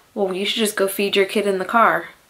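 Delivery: ordinary delivery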